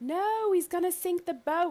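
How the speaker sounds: very high-pitched, shrill yell. Playing a character rushing across a boat: yelling in character. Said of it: "I'm gonna yell".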